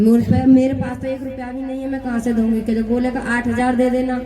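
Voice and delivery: ordinary delivery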